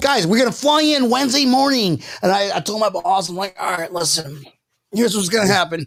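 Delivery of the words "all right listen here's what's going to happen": tough mob enforcer mafia guy voice. Retelling telling the boss about flying in for Thanksgiving, in a mafia member voice. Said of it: "I'm sounding like a mafia member right now".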